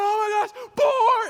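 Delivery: shrill, very high, drawn-out scream at full volume. Recounting someone kicking in his sleep, dreaming of a boar: imitating Paul screaming. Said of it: "And he's screaming".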